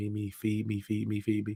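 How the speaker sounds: wailing, bawling, crying-newborn voice. Describing how everyone comes out of the womb: imitating a crying baby. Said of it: "We're all like crying".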